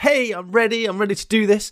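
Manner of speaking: self-assured. Voicing a small dragon springing out: very confident. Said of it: "in a sort of very confident sort of".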